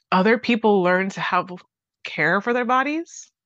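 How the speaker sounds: choked-up, teary voice catching with emotion. Speaker talking to listeners about something that deeply moves them, choked up and tearing up. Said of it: "I'm tearing up".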